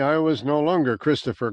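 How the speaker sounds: usual speaking voice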